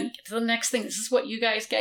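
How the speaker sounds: ordinary talk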